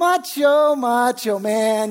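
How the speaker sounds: acted teasing, jeering, mocking taunt. Telling a story of a nurse taunting a crying patient, retelling the mocking. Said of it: "just mocking this guy".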